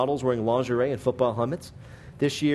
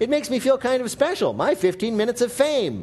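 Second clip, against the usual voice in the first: high, giddy, very happy voice. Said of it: "slightly wounded but very happy actor".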